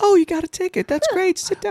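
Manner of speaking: put-on very high-pitched, sweet little old lady voice. Retelling a scene where John Wick comes in, in a sweet old lady voice. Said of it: "you just got that sweet old lady voice".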